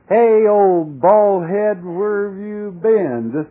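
loud, high-pitched mocking, jeering heckle. Telling the story of Elisha, acting out how they taunted him, acting out a mocking taunt. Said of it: "Just mocking".

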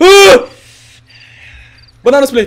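terrified scream, very high and loud.

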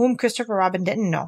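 ordinary delivery

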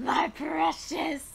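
breathy creature voice, breathed out in whisper. Reading a villain's lines aloud: Gollum voice. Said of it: "sounding like Gollum".

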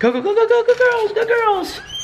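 very high-pitched, cheering voice, way up high.

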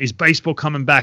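ordinary talk, nothing marked

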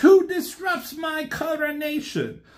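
mock yell, pitched very high and shrill. Retelling a movie coronation scene, imitating Starscream yelling. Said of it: "Starscream yells".

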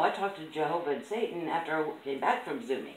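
ordinary talk, nothing marked

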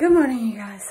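breathless, out of breath, catching breath. Greeting 'you guys' right after a workout, out of breath. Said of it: "1 second, let me get myself together".

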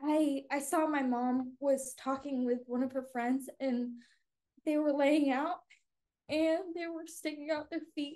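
voice on the verge of crying. Recounting a childhood memory about your condition, on the verge of crying. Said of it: "now I'm gonna cry".

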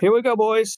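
loud, high-pitched booming call. Leading the party through a door as the paladin: saying it real loud. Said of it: "Says the paladin real loud".

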